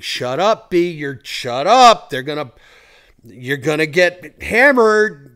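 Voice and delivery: very loud scream at full volume. Retelling the voice in their head during an argument: imitating an inner voice screaming. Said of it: "the voice in my head is screaming".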